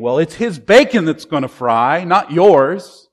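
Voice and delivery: loud, taunting, mocking tone.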